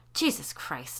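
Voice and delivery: low, grumbled, muttered under the breath. Sally, hearing the creature is a lower-level demon, muttering. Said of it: "Sally muttered".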